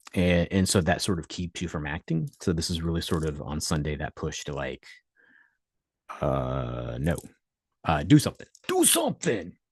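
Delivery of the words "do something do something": put-on game announcer voice, higher. Urging listeners to act: Mortal Kombat "Finish him" voice. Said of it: "in a Mortal Kombat, "Finish him" voice".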